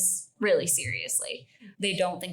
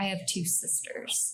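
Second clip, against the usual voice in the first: quieter muttered whisper under the breath; 4 dB quieter than usual. Retelling how Butch whispered under his breath while Joe was on the phone. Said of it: "he can just hear him under his breath whisper".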